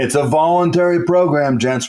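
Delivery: put-on loud instructor-style yelling, calling out. Retelling how instructors yelled at swimmers: imitating instructors yelling. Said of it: "they're yelling".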